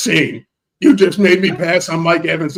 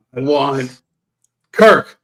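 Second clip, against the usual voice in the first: barking put-on voice; 3 semitones lower, 3 dB louder than usual. Retelling a streamer's lines to the others: Silva impersonation, Rottweiler bark. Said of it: "your Silva impersonation does sound like a".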